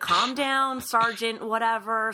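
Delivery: calm, soothing voice.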